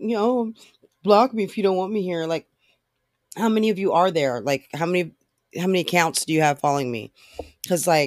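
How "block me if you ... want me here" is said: ordinary delivery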